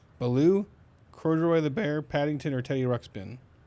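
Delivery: ordinary delivery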